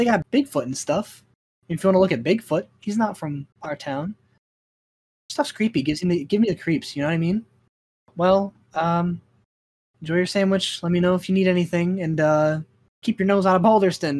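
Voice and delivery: teasing, light-hearted, half-kidding tone. A woman talks to someone eating a sandwich before she leaves, joking tone. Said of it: "like a joking tone".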